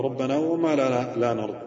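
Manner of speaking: plain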